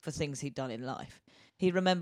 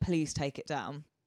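put-on hysterical voice, quieter; 5 dB quieter than usual. Retelling a lady's plea to take down a Facebook post: imitating someone in hysterics. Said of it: "in hysterics".

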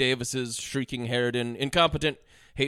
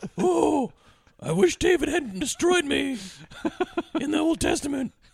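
very high-pitched put-on voice. Voicing the chair's reply to Clint's question, in a high-pitched voice. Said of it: "he used a high pitched voice".

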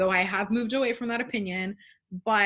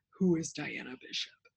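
put-on sexy voice, lower and quieter; 4 semitones lower, 6 dB quieter than usual. Retelling a scene where a character interrupts someone with a question, in Domenico's sexy voice. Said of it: "in the sexiest voice, which I can't even imitate".

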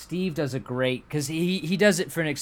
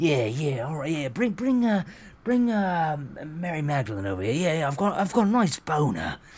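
put-on London Cockney accent, king voice; 3 semitones higher than usual. Retelling an actor playing Henry VIII: imitating a Cockney actor. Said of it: "It's so funny 'cause it's like".

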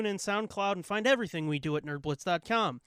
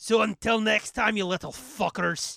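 put-on Scottish accent, louder; 3 semitones higher, 5 dB louder than usual. Signing off the show to the audience, in a Scottish accent. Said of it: "that's Scottish".

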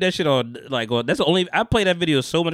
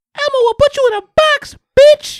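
badly done, high, loud, squealing puppet voice; 11 dB louder than usual. Back after a countdown, addressing boys and girls in a bad Elmo impression. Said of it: "wasn't the greatest Elmo impression".

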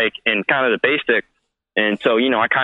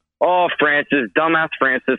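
put-on New York accent; 3 semitones higher than usual. Retelling how a friend answered late-night calls: imitating a new york accent. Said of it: "with his New York accent and be like".

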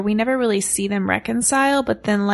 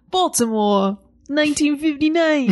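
failed, put-on imitation of a Baltimore accent; 5 semitones higher than usual. Asking what Carla's reading sounded like, imitating Carla's Baltimore accent attempt. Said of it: "I was trying to do a Baltimore accent".

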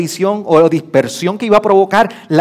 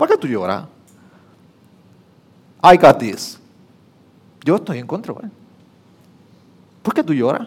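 commanding voice of authority, fully in control; 4 semitones lower, 4 dB quieter than usual. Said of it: "con autoridad".

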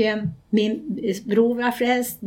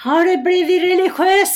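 mock shouting, louder and higher-pitched; 8 semitones higher, 6 dB louder than usual. Retelling a phone call, quoting the woman who called, retelling a shout. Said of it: "skrek hon".

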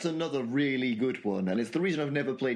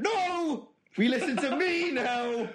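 pretend shout. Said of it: "So that I can just shout".

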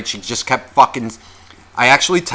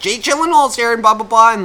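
put-on high-pitched tipsy woman hollering, drunken yell; 9 semitones higher than usual. Retelling how a drunk woman kept yelling while coming closer: imitating a woman yelling. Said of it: "she just keeps yelling the name".

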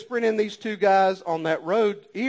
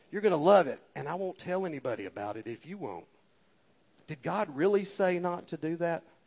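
luring, coaxing, tempting half-whisper close in the ear; 2 semitones lower, 7 dB quieter than usual. Speaker warning listeners about the devil, acting out its half-whisper: imitating a tempting half-whisper. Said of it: "he'll whisper in your ear".

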